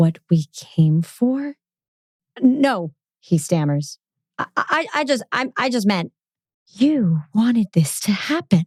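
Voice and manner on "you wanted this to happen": hissed out, swooping, voice turning strange. First-person narrator speaking to Callie after he stammers a denial: hissing. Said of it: "I hiss".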